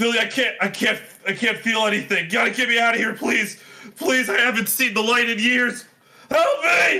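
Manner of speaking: frantic, panicked screaming, very high pitched. Seeing Fildy after years, a character begs to be freed: Sebastian panicking and screaming. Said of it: "he's just like panicking and screaming".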